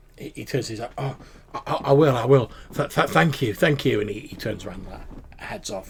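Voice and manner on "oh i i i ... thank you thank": nervous stuttering, higher and louder. Voicing a character thanked after a hug: stammering NPC. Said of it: "he sort of stammers".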